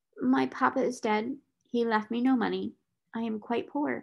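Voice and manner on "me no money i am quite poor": plain reading voice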